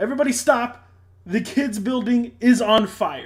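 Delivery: loud, high-pitched screaming. A player's character screams to the whole battlefield, screaming. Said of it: "I scream to the whole battlefield".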